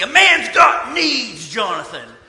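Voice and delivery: put-on slow, loud yelling.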